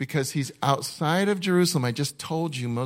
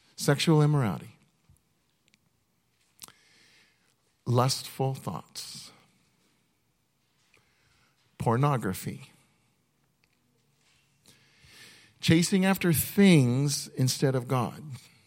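slow, measured, deliberate reading. Reading a list aloud to listeners, one item at a time: reading slowly. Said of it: "I'm going to read it slow".

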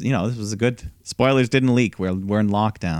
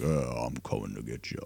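very low, very soft, deep cartoon-villain voice; 10 semitones lower, 13 dB quieter than usual. Show how Damian Priest could be like a villain, in a deep cartoon-character Damian Priest voice. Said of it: "deep, like cartoon character voice".

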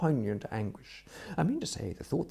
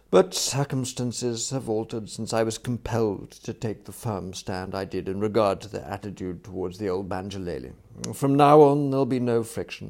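plain reading voice

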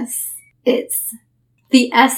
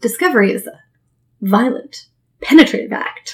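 put-on, halting movie-scientist voice. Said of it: "Do, do it in his voice".

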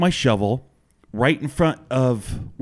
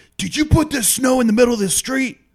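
very high, shrill yell; 11 semitones higher than usual. Retelling how a driver yelled from his car window: imitating a man yelling. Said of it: "he starts pointing and yelling".

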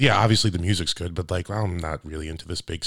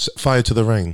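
slow, raised-pitch English accent; 4 semitones higher, 5 dB louder than usual. Saying a line that another speaker suggested, in an English accent. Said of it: "Do her accent".

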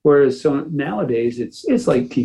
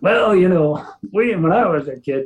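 put-on old man voice, pitched up; 6 semitones higher than usual. Speaker jokes about how they sound looking back, in an old guy voice. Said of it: "sound like an old guy going".

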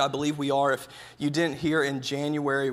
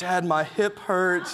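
put-on crying, slower; 4 semitones higher than usual. Father retelling his daughter's complaint while they run, imitating daughter crying. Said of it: "She's like crying".

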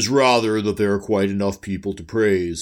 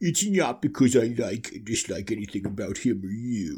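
soft, droopy, hangdog cartoon dog voice; 5 dB quieter than usual. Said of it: "Thorhall Droopy Dog".

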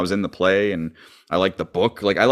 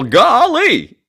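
put-on goofy Southern voice, higher and louder; 14 semitones higher, 6 dB louder than usual. Asked to do the character, trying his word: Gomer Pyle impression. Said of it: "if anyone's gonna do Gomer Pyle, it's you".

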